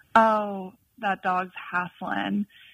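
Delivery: slow, drawn-out Southern drawl. Quoting what a woman used to say about a panting dog, in her Southern accent. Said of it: "in her Southern accent".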